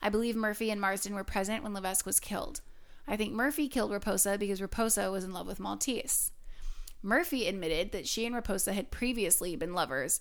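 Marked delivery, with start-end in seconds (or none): none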